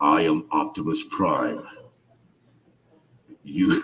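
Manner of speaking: very deep, very low, slow, echoing voice. Talking across an open water bottle for echo: Optimus Prime voice into a water bottle. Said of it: "if I talk in here, there's a little bit of that echo".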